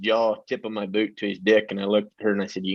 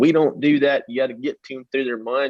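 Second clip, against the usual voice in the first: imitated woman screaming and hollering, pitched higher; 4 semitones higher, 3 dB louder than usual. Retelling a barn owner's reaction to his slapping her horse: imitating a woman screaming. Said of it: "she's screaming and hollering".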